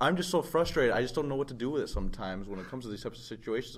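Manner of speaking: usual speaking voice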